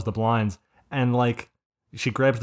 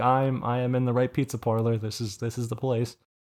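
plain

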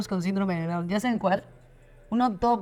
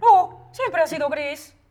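put-on dog voice, high and loud; 7 semitones higher, 7 dB louder than usual. Told their dog voice is loved, the speaker demonstrates it: dog voice. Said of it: "mi voz de perro sería como".

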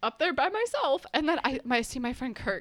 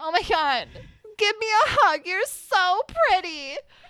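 put-on loud, drawn-out, sloppy drunken gushing; 7 semitones higher, 7 dB louder than usual. Retelling meeting a drunk girl in a frat hallway: imitating a drunk girl. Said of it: "this drunk girl in the middle of the hallway".

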